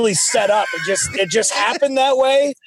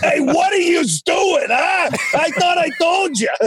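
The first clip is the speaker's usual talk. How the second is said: put-on pitched-up New Jersey accent; 8 semitones higher than usual. Doc acts out a wrestler's words during a four-way tag match: jersey accent. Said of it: "Doc does a good Jersey accent".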